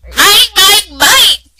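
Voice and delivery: high, loud roaring monster voice. Reading a dinosaur story aloud, doing the Minosaur's line in a funny Minosaur voice. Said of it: "I'm going to do a funny voice for Minosaur".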